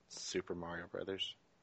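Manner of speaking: let-down tone. Taking a turn naming a game for another player, disappointed. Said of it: "you said that so disappointingly".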